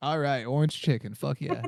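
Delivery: ordinary delivery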